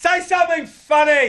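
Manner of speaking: very high, loud heckling yell. Retelling heckling a comedian from the back of the room, imitating own yell. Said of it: "I just yelled out".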